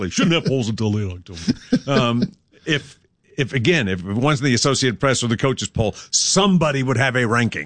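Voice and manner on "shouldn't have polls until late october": mock sarcastic complaining voice, low and derisive. Mocking a tired argument about early polls: mocking voice for a tired argument. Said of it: "In that voice, exactly".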